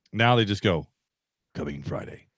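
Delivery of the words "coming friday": breathy, whispered movie-trailer announcer voice. Quoting how short movie trailers now end: movie trailer announcer voice. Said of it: "do the movie man's voice".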